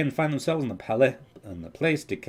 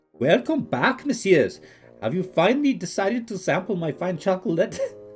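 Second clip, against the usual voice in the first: put-on Indian accent, pitched up; 8 semitones higher, 4 dB louder than usual. Voicing the chocolate shop keeper greeting returning visitors, with an accidental indian accent. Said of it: "that immediately turned into an Indian accent".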